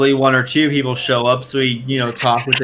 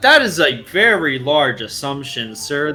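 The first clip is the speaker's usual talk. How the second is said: open, blatant sarcasm with swooping pitch. Answering a player's question in character with blatant sarcasm. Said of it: "not even, like, trying to hide the sarcasm".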